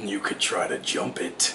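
slow, soft, dark sarcastic hiss. Seagull, to Horse at the canyon's edge, hissed with dark sarcasm. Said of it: "Seagull hissed with dark sarcasm to Horse".

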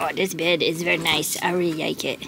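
low talking-dog voice. Showing the dog on its new bed, speaking as the dog. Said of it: "She's like".

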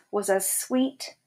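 plain reading voice

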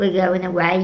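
normal talking voice

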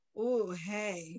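low, soft, sultry, seductive voice. Asked what happened to the speaker's voice, showing off talking low, mock sultry voice. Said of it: "And sultry and seductive".

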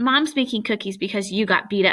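ordinary delivery, nothing marked

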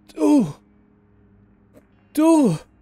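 very high, breathy, horrified gasp. Narrator voicing a man as a figure approaches him, breathed in horror. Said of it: "Hauchte er voller Entsetzen".

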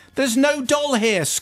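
scornful tone. The narrator's aunt, outside Poppy's door, scoffs at Poppy. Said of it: "scoffed my aunt".

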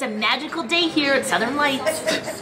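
commercial announcer spokesperson voice. Filming a mock commercial for Southern Lights, in a commercial announcer voice. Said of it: "You sound like a commercial girl".

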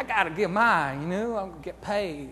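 put-on rural country accent with country twang. Describing the get-rich-quick mindset, slipping into a redneck voice. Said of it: "I'm going into a redneck voice".

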